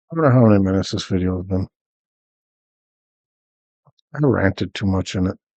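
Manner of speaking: sleepy, dry, monotone delivery. Recording a video while building a base, sleepy and monotone. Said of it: "I'm a little sleepy and sound a little dry or monotone".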